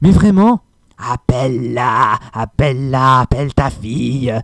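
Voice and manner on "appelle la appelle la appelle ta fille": husky, hoarse, very slow female dragon voice. A man imitating a female dragon character he struggled with: hoarse female dragon voice. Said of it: "c'est vraiment une voix comme ça".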